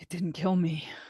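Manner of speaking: tearful voice, on the verge of tears. Voicing a character whose eyes fill with tears, sitting up: tearful voice. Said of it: "you see her eyes fill with tears".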